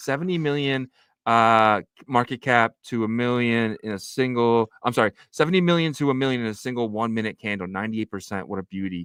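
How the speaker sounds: ordinary delivery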